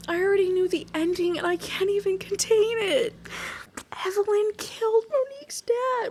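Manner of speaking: very high, tearful speech through held-back sobs. Reacting to a book's twist while reading it aloud: crying while talking. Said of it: "I'm crying 'cause I'm trying not to sob".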